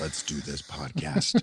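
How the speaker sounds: whispered, foreboding movie-trailer narrator voice. Asked to open the podcast in movie trailer voice: ominous movie-trailer voice. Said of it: "I can go for ominous".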